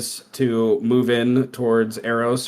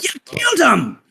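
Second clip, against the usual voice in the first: furious dwarf shout, higher. Voicing a dwarf who yells at Spencer: dwarf yelling angrily. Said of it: "the dwarf yells to Spencer".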